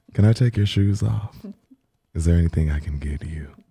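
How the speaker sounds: put-on, mock sultry phone voice. Practicing for fun after being called a sex voice worker: put-on phone sex voice. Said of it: "I keep getting called a sex voice worker".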